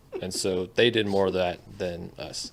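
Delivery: ordinary talk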